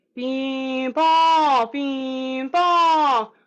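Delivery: minimal mouth movement. Demonstrating a voice exercise to listeners, with less jaw movement. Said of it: "Try to do it with a little bit less movement".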